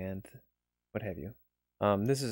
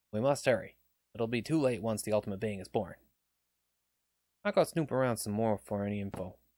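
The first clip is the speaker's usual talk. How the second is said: earnest, pressing, urgent resolve. A scientist helping the police speaks to the team, urgent and earnest.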